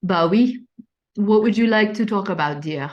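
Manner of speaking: put-on French accent on English. Asked by a co-host for a final accent, French accent. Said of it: "You want to take us home with your final accent?".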